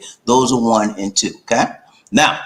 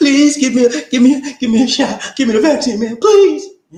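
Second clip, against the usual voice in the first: put-on sobbing, much higher, louder, slower; 13 semitones higher, 5 dB louder than usual. Mocking anti-vaxxers begging for the vaccine in hospital, imitating crying, begging. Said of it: "They crying like a baby, begging the people".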